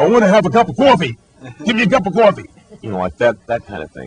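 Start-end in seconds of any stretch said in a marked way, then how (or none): 0.0-2.5 thick, loud, high-pitched New York accent. Showing the heavy New York accent the speaker used to have. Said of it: "I did have a heavy New York accent".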